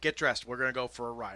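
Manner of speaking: ordinary talk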